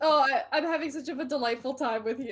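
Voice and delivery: laughing very hard, to tears. Chatting with another speaker after a long laugh: laughing so hard eyes water. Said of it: "I'm crying right now, actually".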